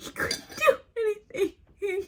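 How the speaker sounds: tearful crying.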